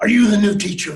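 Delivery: growling, gruff voice. Retelling an American man's first words to him, retelling a growl. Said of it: "he growled at me".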